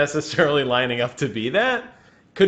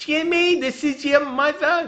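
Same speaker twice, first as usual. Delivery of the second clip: very high, slow, drawn-out busybody mom voice; 12 semitones higher than usual. Imitating his own mom calling him Jimmy, in a Fran Drescher yenta voice. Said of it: "just really yenting it up".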